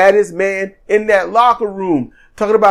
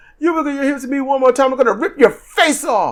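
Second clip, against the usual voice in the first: put-on riled-up, hot, fired-off shouting; 5 semitones higher, 3 dB quieter than usual. Retelling what a wrestler yelled at his opponent: imitating someone shouting. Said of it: "he shouts".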